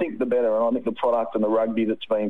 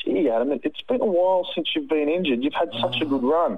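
put-on broad New Zealand accent, pitched up; 6 semitones higher than usual. Retelling what your doctor said on the sidelines in Canberra, in Sharon Flahive's thick Kiwi accent. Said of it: "she said in a thick Kiwi accent".

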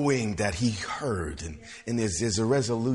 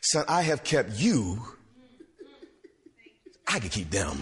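heavy, knowing sarcasm in swooping sing-song. Retelling what the Lord said to the speaker: retelling a sarcastic tone. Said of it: "it was almost a level of sarcasm".

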